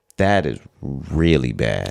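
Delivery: deliberately weighty, grave voice with swooping pitch. Speaking to a co-speaker, deliberately switching voice to sound: serious voice. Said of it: "I'm using my voice now like this because I'm being so serious".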